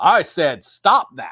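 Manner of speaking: mean, nasty voice, slow and deliberate. Speaker retells what the show's voice told them to stop: imitating mean Big Brother voice. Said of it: "they had like the mean Big Brother voice that said".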